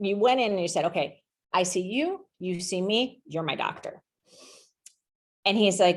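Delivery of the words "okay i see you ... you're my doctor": slow, measured, mafia-style mobster delivery. Retelling own words to the doctor in a conference room: imitating own mafia-like tone. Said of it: "it was very mafia-like".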